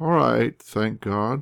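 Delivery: weak, strengthless, feeble voice. Lying in bed, the narrator answers a woman asking how they feel, weak voice. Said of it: "I replied in a weak voice".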